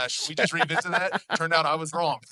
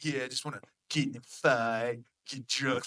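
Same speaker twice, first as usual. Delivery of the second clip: sarcastic, mocking, slow drawl; 3 semitones lower, 4 dB quieter than usual. Quoting a character's line from the movie: imitating a mocking tone. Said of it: "the way she's kinda mocking".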